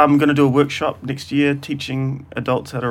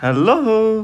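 bright, pitched-up, put-on eager fake enthusiasm; 7 semitones higher than usual. Repeating the greeting when asked to do it again: put-on enthusiastic voice. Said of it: "Do it again".

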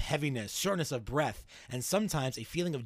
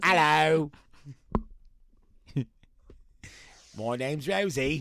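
weird put-on Cockney child voice; 4 dB louder than usual. Answering the wish that small children be Cockney kids, in a weird, poor Cockney kid voice. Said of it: "weird, poor Cockney English kid".

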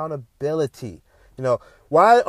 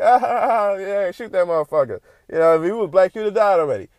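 put-on amused, laughing, joking voice, higher pitch; 3 semitones higher than usual. Retelling own reaction to the video: retelling laughing remark. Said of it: "it was funny to me".

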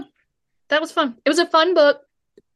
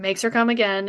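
ordinary talk

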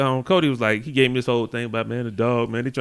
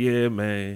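put-on depressed voice, lower pitch; 4 semitones lower, 4 dB quieter than usual. Retelling a phone call from a friend: imitating Cody sounding depressed. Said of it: "he sounding all depressed".

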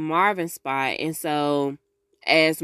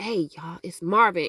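put-on hushed voice, not loud. Retelling a character knocking on a door: Marvin trying not to be loud. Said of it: "he trying not to be loud".

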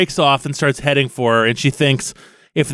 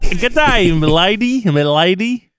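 put-on high young Australian boy, m'lady drawn out; 5 semitones higher than usual. Narrating a lad hopping out of a kangaroo pouch, voicing him as a little Australian lad. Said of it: "little Australian lad".

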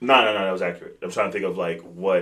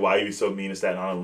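ordinary talk

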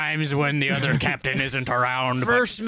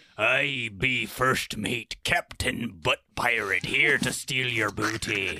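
put-on pirate voice, lower pitch; 4 semitones lower, 3 dB quieter than usual. A show host introduces their pirate persona during the opening, in a pirate voice. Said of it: "I be Captain Brown Pants".

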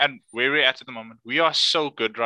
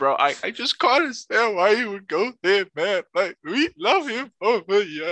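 emotional, pitched-up, pleading outburst; 6 semitones higher than usual. Acting out how upset he'd get on the podcast: acting super emotional. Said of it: "proper emotional".

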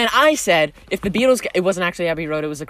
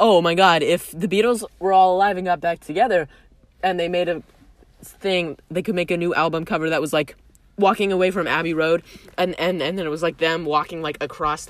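ordinary talk

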